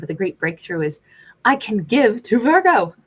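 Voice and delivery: loud, laughing through the words. Speaker discussing a character, laughing while talking. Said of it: "I'm sorry I'm laughing".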